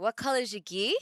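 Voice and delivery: casual, everyday Australian accent. Describing how Australians phrase things, giving an example: Australian accent. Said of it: "with the Aussie voice where they say things like".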